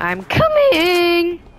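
voice cracking on drawn-out coming. Running over to a teammate during a fight, voice cracking. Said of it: "my voice crack".

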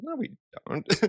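imitated scoffing. Retelling how one composer answered another: imitating someone scoffing. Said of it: "Carter's scoffing at him".

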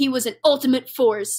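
ordinary delivery

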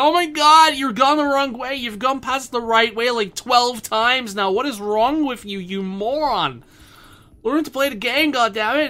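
furious, angry, high-pitched screaming. Imagining viewers yelling about going the wrong way: imitating viewers screaming at him. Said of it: "I can just hear the viewers screaming at me".

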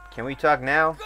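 pleading tone rising at end. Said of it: "repeatedly asking a character to talk".

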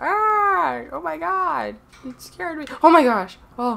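very slow, high, fake fright with stretched "ah". Acting out being scared by something popping out: mock startled scream. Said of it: "something just pops out of nowhere scaring me".

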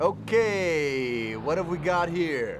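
touch of New York accent. Playing Sleeping Dogs for a YouTube channel, answering a dispatch call, slight New York accent. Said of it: "You sounded kind of New Yorkian".

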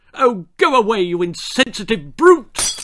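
loud, high, dismissive bawling. The big-haired brat in the chair answers Spike as he offers tea, bawled. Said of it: "bawled the big-haired brat".

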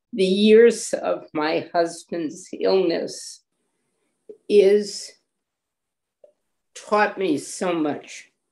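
tearful, close to breaking into tears. A speaker who has just said they are going to cry goes on: tearful. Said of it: "And now I'm going to cry".

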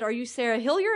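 put-on non-native, broken English with a Persian accent. Softball coach retelling a phone caller's words, in broken english with a persian accent. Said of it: "broken English with a Persian accent".

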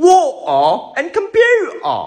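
high, slow, loud posh British drawl, "water", "computer" stretched. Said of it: "Or you can say".

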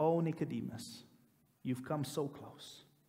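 hushed near-whisper under the breath, to himself. Retelling a story scene, a man speaking to himself, almost a whisper. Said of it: "almost in a whisper to himself".

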